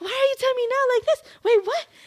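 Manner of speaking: put-on very high, shrill, rapid, frantic disbelief. Retelling the sister's reaction to the news: imitating panicked sister. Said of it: "she's having a mini panic attack".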